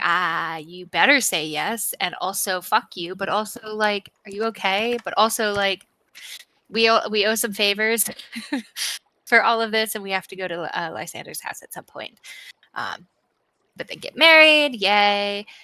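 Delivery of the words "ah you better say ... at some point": usual speaking voice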